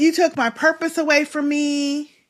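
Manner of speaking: mock crying, tearful voice. Retelling what an upset woman said to him, imitating someone crying. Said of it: "and she starts crying".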